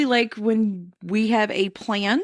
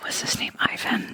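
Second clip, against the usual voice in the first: hushed whisper, quieter. Asking about the creature in a photo, whispering. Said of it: "Why are we whispering that?".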